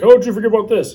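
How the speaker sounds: high, loud, mocking put-on commentator voice.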